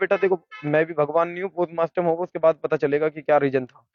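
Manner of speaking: normal talking voice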